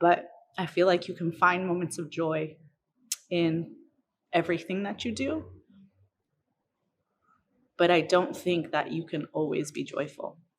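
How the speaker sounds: choked up, getting emotional. Talking about what steals joy, getting emotional. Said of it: "sorry, I get emotional when I talk about things".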